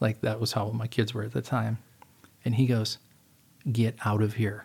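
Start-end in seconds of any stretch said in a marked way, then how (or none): 3.7-4.7 put-on dead-serious, grave tone. Retelling someone's warning about Special Forces: imitating a dead-serious warning. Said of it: "as serious as he could say it to me".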